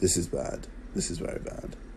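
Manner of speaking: soft, dismayed whisper.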